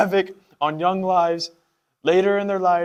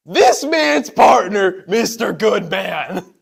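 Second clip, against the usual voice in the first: gravelly, mocking voice, louder; 2 semitones higher, 5 dB louder than usual. Reading a character's line aloud in a story: mocking gravelly tone. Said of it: "almost in a mocking, gravelly tone".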